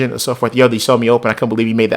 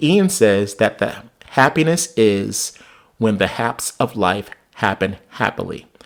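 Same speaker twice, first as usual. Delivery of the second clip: slow, unhurried, deliberate and careful wording; 2 semitones lower than usual. Speaker repeats a quoted saying so listeners can follow it, said slowly. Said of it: "I will say it slowly".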